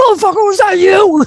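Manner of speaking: mock angry outburst. Retelling a phone call, the speaker imitates the other man's reaction, imitating Dan being mad. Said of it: "you're so mad".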